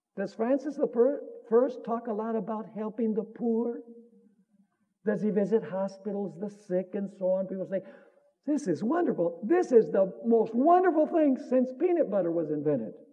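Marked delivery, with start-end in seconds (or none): none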